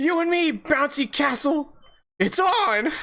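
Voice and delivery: shrill, high, loud delivery with voice breaking. Recounting the last part of a character's speech, with a voice crack. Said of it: "With a voice crack and everything".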